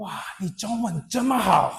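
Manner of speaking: mock enthusiasm. Retelling what a woman said to the speaker, imitating enthusiastic praise. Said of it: "And just so enthusiastic".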